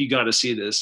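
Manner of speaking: ordinary talk, nothing marked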